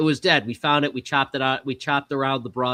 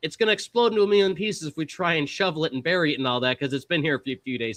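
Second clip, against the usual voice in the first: usual speaking voice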